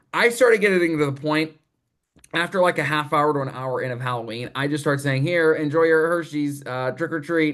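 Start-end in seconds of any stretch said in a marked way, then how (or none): none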